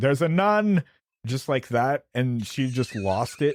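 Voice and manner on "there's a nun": high, strange announcing voice. Retelling announcing a nun during a movie: imitating own odd announcement. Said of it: "I just decided to announce".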